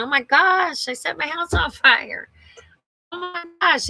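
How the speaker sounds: play-acted, high-pitched screamed-out exclamation. Retelling setting a fire in the house: imitating her own screaming. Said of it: "I started screaming".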